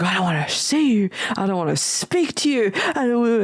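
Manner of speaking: put-on annoyed voice. Retelling a voicemail from a woman, imitating someone being pissy. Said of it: "She was pissy".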